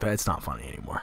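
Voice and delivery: quiet, flat, low, soft and fast aside. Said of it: "and I was like".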